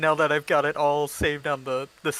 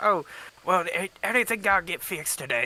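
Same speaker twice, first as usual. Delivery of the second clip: attempted Russian accent accidentally slipping into southern accent; 3 semitones higher than usual. Speaker attempting a Russian accent that slips; accidental southern accent. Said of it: "I've suddenly turned southern instead of Russian".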